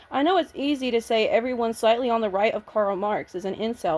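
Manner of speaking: ordinary delivery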